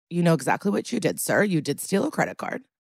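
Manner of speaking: ordinary talk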